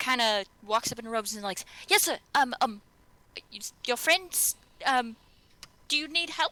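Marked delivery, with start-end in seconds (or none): 1.9-6.5 put-on young boy voice, higher. Game master voicing a youngish boy approaching the party: voicing a young boy. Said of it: "18-year-old boy".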